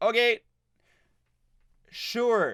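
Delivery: okay said high and underwhelmed. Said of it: "was just".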